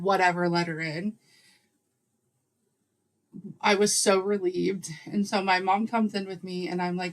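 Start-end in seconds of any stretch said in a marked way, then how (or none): none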